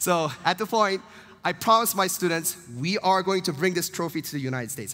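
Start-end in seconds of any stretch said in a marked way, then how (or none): none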